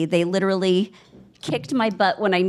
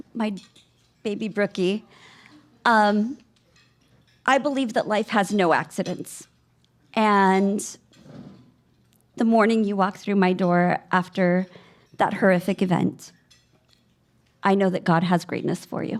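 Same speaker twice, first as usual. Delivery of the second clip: tearful, crying while speaking. Accepting an award and speaking to a former student: tearful.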